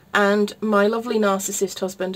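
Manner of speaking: normal talking voice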